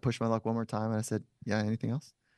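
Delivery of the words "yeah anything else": mock offhand, totally unbothered, unimpressed and needling. Retelling a challenge put to a tough-looking man: imitating own unimpressed tone.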